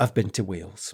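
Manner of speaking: play-acted morose, low, flat deadpan delivery. Quoting a character's reply from the show: deadpan, morose Christine voice. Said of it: "And she just deadpan".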